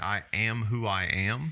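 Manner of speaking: usual speaking voice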